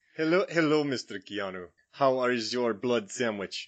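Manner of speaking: put-on British speaker putting on a Romanian accent. Greeting Mr. Keanu in a Dracula bit, in Gary Oldman's Dracula voice. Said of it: "a British guy doing a Romanian accent".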